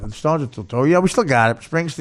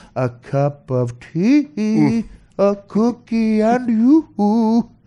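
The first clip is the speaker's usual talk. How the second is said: high, very slow, drawn-out, toothless cartoon witch voice; 9 semitones higher than usual. Describing how the man without teeth talked, in a Bugs Bunny witch voice. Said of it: "Talking like the witch on the Bugs Bunny thing".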